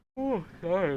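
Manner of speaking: yawning while talking. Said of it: "I'm yawning".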